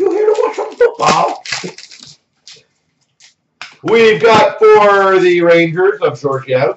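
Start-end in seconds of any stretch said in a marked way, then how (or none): 0.0-1.4 very high-pitched mock English accent. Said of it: "That was my accent, too".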